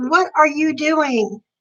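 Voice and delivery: put-on toned-down, mild, held-back yell. Pedestrian recalls a driver nearly hitting her in the crosswalk, retelling a scream. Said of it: "I screamed at him".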